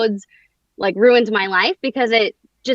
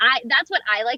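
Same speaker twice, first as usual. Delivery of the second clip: usual speaking voice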